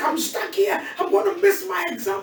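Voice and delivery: mock tearful voice, as if in tears. Retelling a snowed-in caller missing an exam: imitating someone crying. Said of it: "And she's crying".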